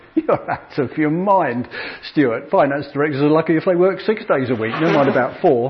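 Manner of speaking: ordinary delivery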